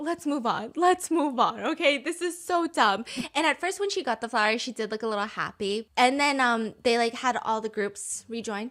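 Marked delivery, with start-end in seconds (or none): 0.0-1.6 put-on pleading, begging, desperate repeated tone. Voicing what the people watching say, imitating people begging. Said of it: "people are just begging".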